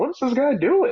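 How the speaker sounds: high-pitched, confused, baffled, incredulous voice. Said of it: "And people are thinking".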